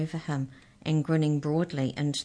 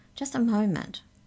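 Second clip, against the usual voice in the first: wary, distrustful, suspicious, pitched up; 6 semitones higher than usual. The Hexchecker joins the group and speaks up, suspicious. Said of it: "she said suspiciously".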